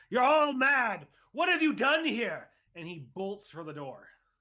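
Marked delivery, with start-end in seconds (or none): 0.1-2.4 very high, loud, terrified, panicked scream. A character screams out at the group, then bolts for the door: screaming out. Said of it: "Cox screams out and says".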